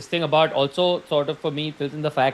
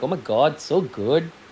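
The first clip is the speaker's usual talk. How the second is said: sarcastic delivery. Recapping an episode, the speaker acts out Mark greeting Cobell, imitating Mark's sarcasm. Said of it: "he's being that sarcastic".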